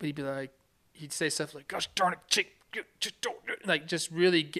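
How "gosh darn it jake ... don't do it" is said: put-on angry, worked-up, pitched-up griping tone. Retelling how a pitcher yelled on the mound: imitating Jake Peavy, loud and mad. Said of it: "but loud and just, like, mad".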